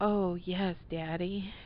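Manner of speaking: purring voice. Reading her reply to his command, purring. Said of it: "she purred".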